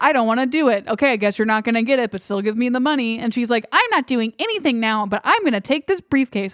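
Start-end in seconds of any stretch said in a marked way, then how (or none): 3.7-6.5 deliberately irritating, grating, silly put-on voice. Quoting a woman in a story: put-on annoying voice. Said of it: "I'm just doing an annoying voice".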